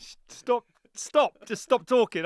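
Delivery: high, loud, exasperated shout.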